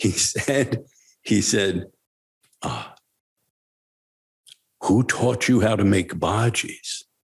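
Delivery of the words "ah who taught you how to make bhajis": put-on tone full of amazed wonderment. Retelling what the teacher asked about the bhajis: imitating wonderment. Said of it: "in wonderment".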